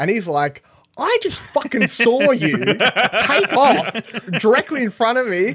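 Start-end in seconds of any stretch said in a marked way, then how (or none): 1.0-5.5 put-on very high, raised, furious rant. Retelling a scene where a princess lies to Vader: imitating an angry Vader. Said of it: "he's pissed".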